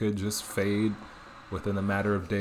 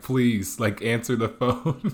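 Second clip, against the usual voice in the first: mock crying voice; 3 semitones higher, 6 dB louder than usual. A son retells his mom's call after he went silent, imitating someone crying. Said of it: "mom is crying like".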